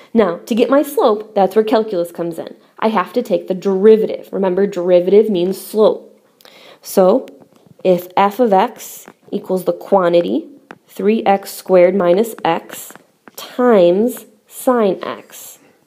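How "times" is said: emphasis on "times". Reading a function aloud in a calculus lesson, stressing the word times. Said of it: "I'm stressing that word times".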